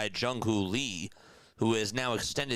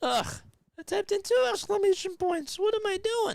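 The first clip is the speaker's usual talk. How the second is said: very high voice, breaking and cracking; 4 dB louder than usual. Calling a ballgame live, the speaker scolds themself for a chat typo, voice cracking. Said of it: "Why am I cracking my voice?".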